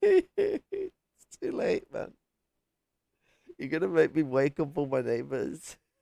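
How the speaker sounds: high, swooping, stifled burst of laughter. Late at night, trying not to wake the neighbors: holding back laughter. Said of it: "I'm trying not to cry out laughing here".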